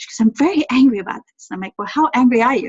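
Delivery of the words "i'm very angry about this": sweet, mild-mannered, easygoing voice. Retelling what a sweet, soft-spoken lady said, imitating a soft-spoken woman. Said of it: "very sweet, soft-spoken".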